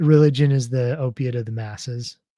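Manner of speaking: plain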